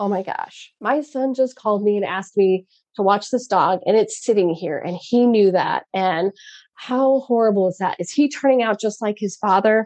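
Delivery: ordinary delivery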